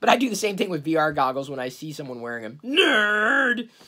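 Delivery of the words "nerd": high ogre voice, word stretched long and drawn out. Mocking someone wearing vr goggles, in an ogre impression. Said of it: "That's my best ogre impression".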